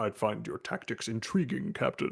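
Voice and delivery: hushed, breathy, whispered put-on voice. Imagining a joke episode, voicing Worf in the corner: imitating Worf. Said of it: "and Worf is in the corner, like".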